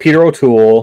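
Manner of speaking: normal talking voice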